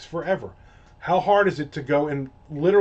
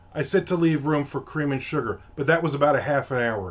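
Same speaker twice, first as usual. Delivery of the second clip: ordinary delivery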